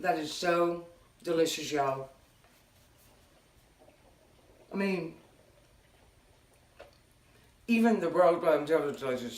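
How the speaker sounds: talking with mouth full, chewing. Tasting a fresh pizza slider during a taste test, talking with mouth full. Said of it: "I'm talking with my mouth full".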